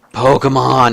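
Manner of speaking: mock-exasperated outburst. Retelling what someone at work blurts out, imitating an exasperated tone. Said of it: "in like the most exasperated tone".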